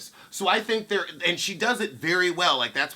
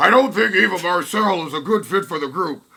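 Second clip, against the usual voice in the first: affected, loud, put-on delivery; 8 dB louder than usual. Quoting what Marlo said about Eva Marcel, Marlo impression. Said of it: "Let me give you the [name] impression of Marlo".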